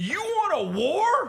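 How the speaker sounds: drawn-out yelling, very high and slow. Retelling yelling at a neighbor firing fireworks: retelling own yell. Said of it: "So I start yelling".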